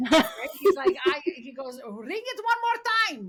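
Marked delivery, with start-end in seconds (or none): 1.9-3.3 put-on Greek accent, pitched very high. Retelling what a guy said to another man, in his Greek accent. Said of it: "he's like in his Greek accent".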